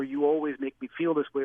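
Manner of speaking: ordinary talk, nothing marked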